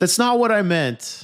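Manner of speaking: put-on big delivery. Speaker retells a man's reply about his brother; retelling saying it big. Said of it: "he kind of like says it big".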